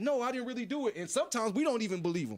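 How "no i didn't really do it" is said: mock begging, imploring, pleading cry. Retelling how released prisoners deny guilt: imitating someone pleading. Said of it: "they're pleading like".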